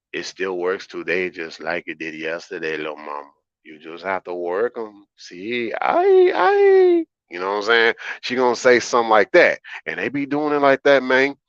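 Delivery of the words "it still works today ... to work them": smooth, soft, slick put-on Spanish accent. Imagining what a great-grandmother tells her great-granddaughters, in a slick spanish accent. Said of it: "with that slick Spanish accent".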